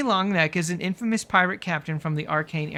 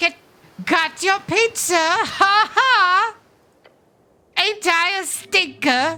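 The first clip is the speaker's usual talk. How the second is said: very high, loud, annoying little crab squeak; 12 semitones higher, 7 dB louder than usual. Game narrator voicing a crab heard through the player's magic, squeaky crab voice. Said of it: "A sound that turns into a squeaky voice".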